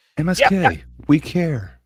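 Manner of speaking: earnest anime-hero voice. Reassuring a chatter named MSK, sounding like an anime character. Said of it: "You sound like an anime".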